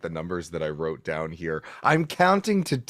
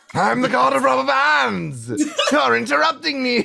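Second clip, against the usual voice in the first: very high, rough, raised voice; 7 dB louder than usual. In a game session, a player speaks as the god of rubber bands: Starscream-like god voice. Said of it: "I'm going to use that voice now".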